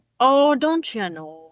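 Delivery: Upper Midwest Minnesotan accent. Discussing how Minnesotans sound Canadian, demonstrating a Minnesotan accent. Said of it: "a Minnesotan accent is more Canadian".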